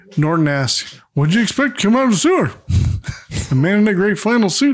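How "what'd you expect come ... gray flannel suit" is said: high-pitched cartoon caveman. Retelling a scene, giving Norton's line in a Barney Rubble voice. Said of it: "I'm doing Barney Rubble".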